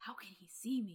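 put-on whisper. Retelling a movie scene where J P whispers to himself: imitating J P whispering. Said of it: "J P whispers to himself".

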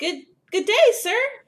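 very high, loud, cheerful calling out. A player's character greets a man working with a shovel, calling out happily. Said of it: "call out to him and wave happily".

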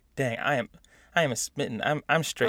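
ordinary talk

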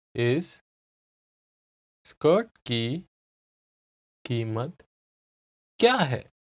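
slow, halting, careful, deliberate word-by-word pace. In a hindi lesson, the speaker repeats a sentence for the listener, slow careful repetition. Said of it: "I'll say it again slowly".

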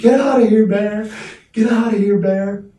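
very high, loud, shrill screaming yell. Retelling screaming at a bear while camping in a hammock, retelling a scream. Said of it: "we were just screaming".

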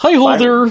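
frog puppet character voice. Greeting everyone after being introduced: Kermit the Frog voice. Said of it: "I'm not Kermit the Frog".

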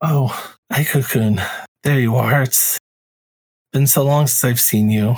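small, slight little voice. Voicing a long-unseen woman greeting a player character: small voice. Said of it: "you hear a small voice".

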